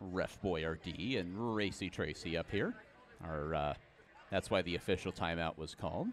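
soft, hushed voice. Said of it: "so I don't wanna speak too loudly".

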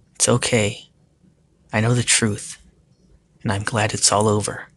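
ordinary delivery

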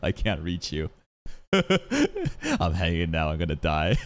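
little laugh throughout, swooping, drawn-out. Retelling what a character says while hanging, imitating his little laugh. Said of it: "I love his little, little laugh".

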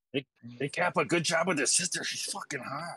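quiet whisper. Whispering in character to another player about his sister: whispering. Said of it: "I whisper that to Kappa".

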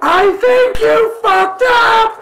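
very high, loud, ear-splitting scream. In a dice game, grabbing another character's ear and screaming into it. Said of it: "And scream into his ear".

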